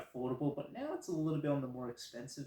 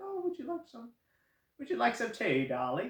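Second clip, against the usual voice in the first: bad put-on Irish accent, very high, swooping; 10 semitones higher than usual. Quoting what people say to them, the speaker puts on a bad Irish accent. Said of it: "that's a pretty bad Irish accent".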